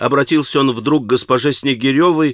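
ordinary delivery, nothing marked

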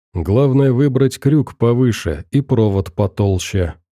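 ordinary delivery

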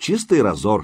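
ordinary talk

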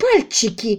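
cried out in revulsion, disgusted. The darkroom's owner, told a sergeant searched there for prints, exclaims with disgust. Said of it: "с отвращением воскликнула Люси".

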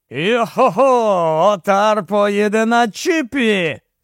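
eager, enthusiastic, very slow drawn-out cry. The Viking, offered a ride home, exclaims enthusiastically. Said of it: "з ентузіазмом вигукнув вікінг".

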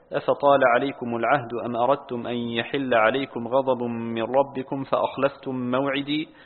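plain

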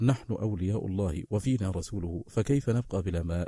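ordinary delivery

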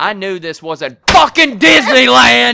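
loud yell. Retelling how Kim walked up to the bar: imitating someone yelling. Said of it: "and then she yells".

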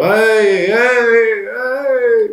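put-on very high, loud, drunk American accent. A player knocks on a closed door in the game: drunk American accent. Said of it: "facendo un accento americano e ubriachissimo proprio".

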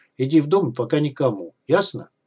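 ordinary delivery, nothing marked

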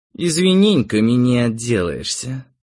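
plain

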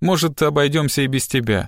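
ordinary delivery

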